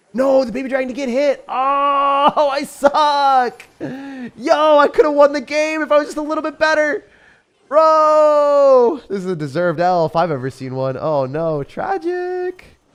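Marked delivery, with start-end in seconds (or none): 10.9-12.6 high, swooping voice jumping way up. Reacting to losing a game he could have won, voice going high. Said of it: "my voice went so high there".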